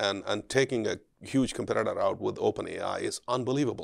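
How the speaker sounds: usual speaking voice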